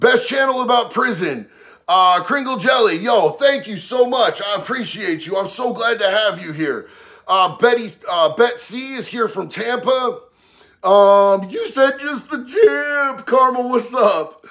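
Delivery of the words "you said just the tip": odd, higher-pitched delivery with "tip" stretched out. Reading chat and doing an impression of that dude. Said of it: "That's my best impression of that dude".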